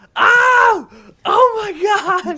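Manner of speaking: very high, slow, drawn-out, thrilled excited shriek. Retelling a reaction to a shocking moment in the episode: retelling own excited scream. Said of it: "I was screaming".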